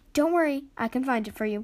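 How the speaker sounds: plain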